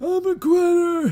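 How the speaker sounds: put-on raspy voice. Retelling a cartoon scene to another speaker, imitating a raspy voice. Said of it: "his raspy voice comes back too when he says".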